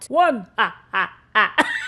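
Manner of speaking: booming, loud voice, delivered very slowly. Joking before starting the haul video: the Count voice. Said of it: "why am I talking like the Count?".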